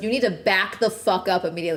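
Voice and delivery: imitated woman's voice turning fierce. Retelling a woman warning a stranger off a child: imitating a woman turning fierce. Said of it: "Immediately flips the switch".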